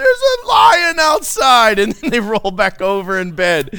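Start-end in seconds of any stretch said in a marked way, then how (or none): 0.0-1.8 put-on high, loud, slow whiny kid wail. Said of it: "And they roll over".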